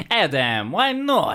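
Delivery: very high, lilting, sing-song voice swooping up and down. Quoting a funny Polish lady questioning him, imitating her up-and-down voice. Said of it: "Her voice goes very up and down".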